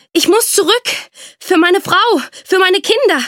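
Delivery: gasped out, pitched very high. Narrator reads a man struggling onward through the snowy forest, gasping. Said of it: "keuchte er".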